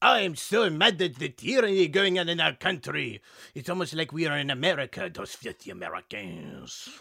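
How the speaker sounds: put-on full-on French accent. Called on in class as a French person named Jacques, stereotypical French voice. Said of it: "you're gonna get the full on French voice treatment".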